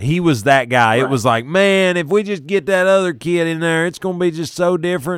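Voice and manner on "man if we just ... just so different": amateur attempt at a Texas accent, pitched up. Quoting what fans said about the backup everybody loved, in a Texas accent. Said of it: "that's as close to a Texas accent as I've got".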